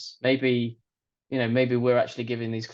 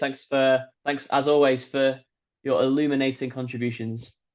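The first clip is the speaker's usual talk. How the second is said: dry, half-mocking, barely sincere, almost sarcastic tone; 2 semitones higher than usual. Signing off for today and thanking Alex, almost sarcastic. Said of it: "You almost said that sarcastically".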